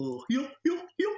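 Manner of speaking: high-pitched, goofy laugh. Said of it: "It might be a goofy laugh".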